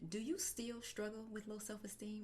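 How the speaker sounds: secretive, hushed half-whisper. Retelling a question women ask when out speaking: imitating a half-whisper. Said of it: "And they'll whisper it to me".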